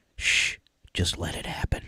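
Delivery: eerie, creepy whisper, close up. Reading a creepy line into someone's ear: creepy whisper. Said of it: "best to whisper in someone's ear".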